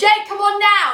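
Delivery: very loud, high-pitched shout. In the game, a player's character calls to Jake 120 feet away: shouting across. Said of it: "you shout across".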